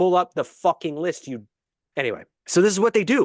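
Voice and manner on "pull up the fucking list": mild, held-in, frustrated and exasperated half-shout. Speaker retells screaming at hosts stalling over a list, retelling own scream. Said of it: "I'm screaming like".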